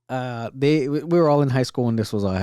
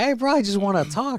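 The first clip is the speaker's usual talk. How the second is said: very high, shouted scream; 10 semitones higher than usual. Telling a high school story, re-enacting calling after him in the hallway: retelling a scream. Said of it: "I'm screaming from in the hallway".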